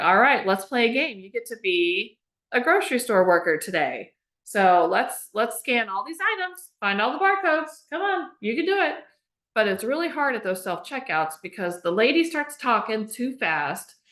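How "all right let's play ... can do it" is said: mock voice used for talking to a child. Retelling narrating a grocery checkout to a child: retelling narrating to a child. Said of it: "I just narrate everything that I'm doing".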